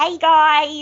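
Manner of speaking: loud, high put-on American accent, guys stretched out. A podcast host demonstrates the accent he uses on the show; put-on American accent. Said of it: "I do an American accent all the time".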